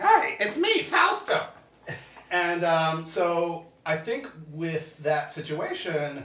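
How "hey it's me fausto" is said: very high-pitched, loud cartoon voice. Describing her voice next to her husband's, Lenny from The Simpsons voice. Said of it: "I have, you know, Lenny from The Simpsons".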